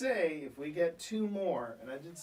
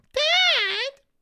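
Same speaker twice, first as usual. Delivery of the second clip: put-on cat voice, higher and louder; 13 dB louder than usual. Correcting the cat's reaction: voicing Hudson the cat. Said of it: "it's more like this".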